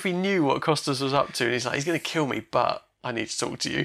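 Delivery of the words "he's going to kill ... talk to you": abashed, shamefaced, almost ashamed tone. Retelling a scene, imitating Borgman asking the prince to talk: shamed voice. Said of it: "almost a shamed voice".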